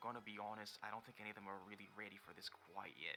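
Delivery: very quiet, barely audible half-whisper. Narrating a game scene, Siega walks up to a player: Siega half-whispering. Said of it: "he whispers".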